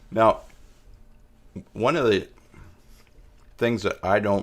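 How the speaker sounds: speaking while chewing, mouth full of food. Speaker starts a new thought while still chewing cheese, talking with mouth full. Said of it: "let me finish chewing that cheese".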